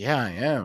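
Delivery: put-on stoic, unmoved, unexcited delivery. Retelling an older man's reply after his hole in one: imitating a stoic man. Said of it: "he was the most stoic person I've ever met".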